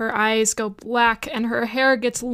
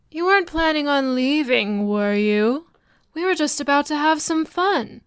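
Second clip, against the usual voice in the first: gentle, lulling, very soothing, calming voice; 4 semitones higher than usual. Game master voicing a woman behind the players at the door, very soothing voice. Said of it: "you hear a very soothing voice".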